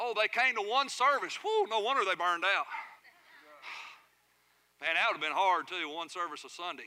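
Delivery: dry, deadpan, heavily sarcastic tone. Talking about ministry burnout in the church, sarcastic. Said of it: "I'm sorry for my sarcasm".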